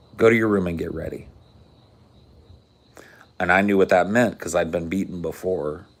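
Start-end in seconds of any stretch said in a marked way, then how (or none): 0.2-1.3 put-on calm, measured voice. Retelling what a father told him: imitating a calm, measured voice. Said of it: "just like I said".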